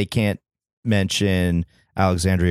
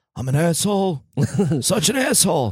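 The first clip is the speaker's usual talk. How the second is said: very high comic voice, every word stretched out; 11 semitones higher than usual. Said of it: "he could also do some Dennis Leary".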